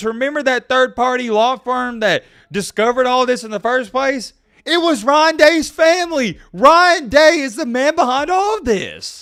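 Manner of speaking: excited, fired-up screaming. Telling listeners about the third-party law firm's discovery, screaming. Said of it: "I apologize for my screaming".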